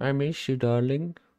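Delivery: high put-on woman's voice. Pretending to be another player's wife for a joke: pretending to be his wife. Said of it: "I don't think I can do an impression of your wife".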